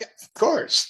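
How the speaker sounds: high, amused, laughing words. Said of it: "And [name] starts laughing".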